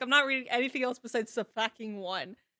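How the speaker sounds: usual speaking voice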